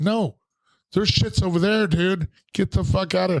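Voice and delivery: put-on angry shout, pitched way up. Retelling how a dude caught you at the cooler, imitating someone yelling. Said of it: "yelling at me like I was stealing".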